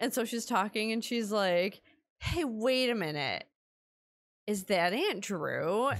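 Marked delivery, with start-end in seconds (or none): 2.2-5.9 put-on animated four-year-old child voice. Retelling what a four-year-old niece said on hearing a podcast: imitating Maria, four-year-old niece. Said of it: "She talks like that".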